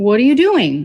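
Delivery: rude, snippy and curt tone. A wife answers her husband, who came out to check on her: rude tone. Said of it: "Her tone right away".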